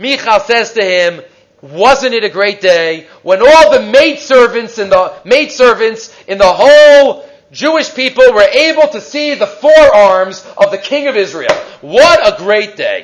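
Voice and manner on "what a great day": put-on sarcastic voice. Retelling a story, the speaker quotes a woman's words to the king: quoting someone sarcastically. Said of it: "she says sarcastically".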